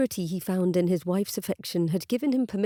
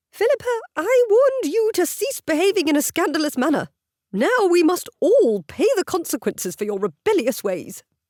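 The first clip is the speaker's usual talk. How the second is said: high, shrill, loud squawk like an angry hen; 10 semitones higher, 7 dB louder than usual. Narrator reads the dowager bursting in to scold Philippa, squawking like an angry hen. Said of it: "as puffed up as an angry hen and squawking almost as horribly".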